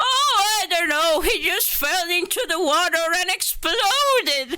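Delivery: put-on high-pitched little old lady voice. Retelling a game quest line: imitating an old woman. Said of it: "making an impression of the old woman".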